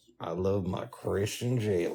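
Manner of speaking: hushed, very quiet put-on Southern accent. Talking to someone who finds this habit of yours annoying, in a put-on southern voice. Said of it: "do the southern voice".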